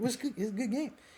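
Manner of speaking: high-pitched, excited gush spilling out.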